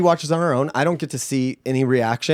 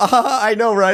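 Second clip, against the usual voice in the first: laughing while talking, higher pitch; 6 semitones higher than usual. Retelling a semi-serious talk on the couch, imitating own past laughing. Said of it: "I just keep laughing 'cause I'm just like".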